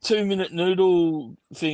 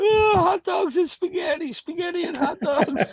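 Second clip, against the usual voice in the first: high, shrill yell from far away; 14 semitones higher than usual. While she asks Rafi what he wants to eat, the speaker re-enacts yelling in the background. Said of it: "I'm yelling in the background".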